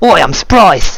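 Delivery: high, fake, put-on Australian accent. Voicing an enemy who leaned into australian: put-on australian accent. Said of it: "We're Aussies now".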